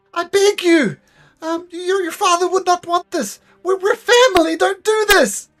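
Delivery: acted sobbing voice. The game master voices the powerless Gareth begging his captors: Gareth sobbing. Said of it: "he is sobbing".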